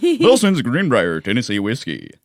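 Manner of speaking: loud, swooping radio announcer voice-actor delivery. Listing the event's sponsors and redoing one name, radio announcer voice. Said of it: "Using your uh, voice actor voice".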